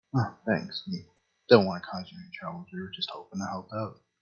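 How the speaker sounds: hushed theatrical whisper, confiding. Playing a character answering the innkeep, whispering. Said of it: "I'm whispering for him".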